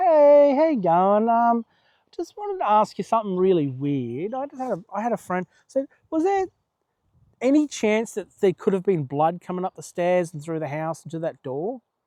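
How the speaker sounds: mock careful, tentative, hesitant delivery. Retelling approaching the owner with a question, acting out a gingerly ask. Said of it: "I remember gingerly".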